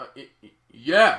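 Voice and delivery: mock flustered stammer. Retelling a movie scene: imitating a stammering, flustered yes. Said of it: "And he's like".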